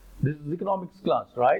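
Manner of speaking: ordinary talk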